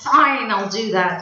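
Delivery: put-on loud, sulky, grumpy teenager voice. Showing how starting a sentence with that word comes across, in a grumpy teenager tone. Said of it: "kind of sounds like a grumpy teenager".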